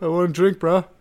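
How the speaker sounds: put-on tough-guy voice. Acting out a drunk calling a smart fridge: Rocky voice. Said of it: "Sound like Rocky there".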